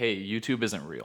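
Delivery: ordinary talk, nothing marked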